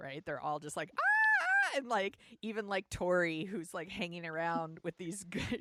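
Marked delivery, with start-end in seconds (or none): 1.0-1.8 very high, loud, freaking-out fangirl shriek. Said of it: "every woman in the roller rink is freaking out".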